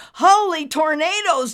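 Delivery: sudden, startled, shrill, high-pitched shriek. A narrator reads Nimbus's cry as the whole table bursts into flames, shrieking. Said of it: "Nimbus shrieked".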